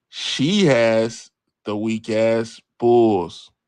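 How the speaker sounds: very slow, deliberate, every word laid out. Putting a bet on the record for the chat: saying it slow. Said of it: "I'm gonna say it slow right now".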